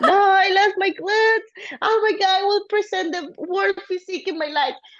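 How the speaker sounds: put-on high-pitched crying, panicked, tearful wail. A bodybuilder retells what she told her husband, imitating her past self crying. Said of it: "I'm crying so bad".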